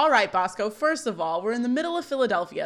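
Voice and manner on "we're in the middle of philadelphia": ordinary talk, nothing marked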